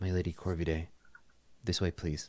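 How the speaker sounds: hushed, barely projected near-whisper murmur. Voicing a nun greeting players quietly in a chapel: nun almost whispering. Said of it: "kind of almost whispering when you approach".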